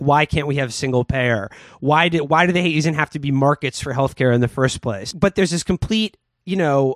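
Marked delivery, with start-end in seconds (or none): none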